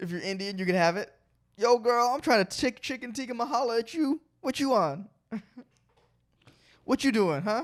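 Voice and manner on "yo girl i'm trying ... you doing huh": smooth flirty delivery with raised pitch. Delivering a made-up food pun pickup line: flirty pickup line delivery. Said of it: "that's my pickup line".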